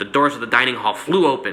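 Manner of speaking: plain reading voice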